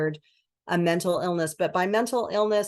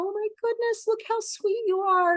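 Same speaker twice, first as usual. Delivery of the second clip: put-on very high, cooing baby talk. Speaker demonstrates how we talk to a new baby: high-pitched baby talk. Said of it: "we talk to them in a high-pitched voice".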